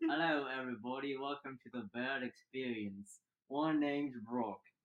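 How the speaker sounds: put-on British accent. Host opens the show, in a British accent. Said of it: "I'm done with the British accent now".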